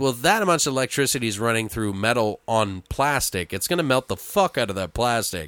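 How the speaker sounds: ordinary talk, nothing marked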